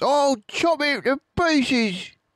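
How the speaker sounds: very high-pitched shouting yell. Bunce, one of the farmers, shouts as they dig; shouting. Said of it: "shouted Bunce".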